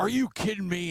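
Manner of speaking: mock sudden, high, screamed-out yell. A father retelling his fifteen-year-old son suddenly yelling in the car, imitating a scream. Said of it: "and just screams it out".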